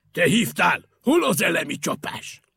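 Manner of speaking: booming, very loud, projected calling voice. The chief firefighter calls down to the one who phoned for help, calling down. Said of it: "A főcsővezető lekiáltott Picúrnak".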